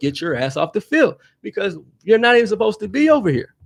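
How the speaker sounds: mock, rising, high-pitched yell, building up. Telling how they yelled at a woman on the field, retelling a yell. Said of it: "that's when I yelled".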